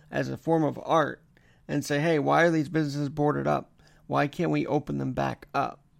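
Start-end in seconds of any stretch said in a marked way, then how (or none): none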